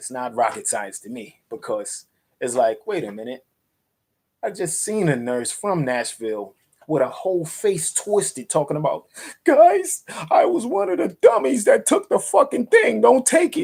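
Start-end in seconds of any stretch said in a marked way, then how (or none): 9.4-13.6 high, loud, shrill, tearful, pleading wail. Acting out a nurse from Nashville warning people, imitating someone crying and pleading. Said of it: "She's like crying and pleading".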